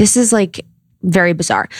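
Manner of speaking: usual speaking voice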